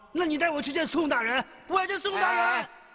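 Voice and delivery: insistent, high yelling. An accused man protesting his innocence to the men detaining him: yelling. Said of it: "你嚷嚷什么？".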